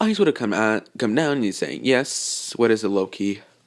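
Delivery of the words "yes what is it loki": normal talking voice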